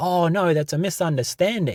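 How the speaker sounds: smooth, unbothered innocent act. Retelling how the manager answered, imitating someone playing it cool. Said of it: "playing it so cool".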